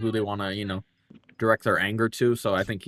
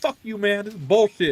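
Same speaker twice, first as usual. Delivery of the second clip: very high, acted-out, pissed-off angry outburst; 12 semitones higher, 4 dB louder than usual. Acting out a customer angry at a male cashier: imitating an angry customer. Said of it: "you're gonna get all pissed".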